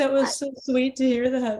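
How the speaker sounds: high-pitched, tearful voice, talking through tears. Answering praise for a documentary that another speaker made, crying while talking. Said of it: "I'm crying".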